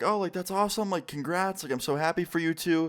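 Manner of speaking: high, gushing parent voice.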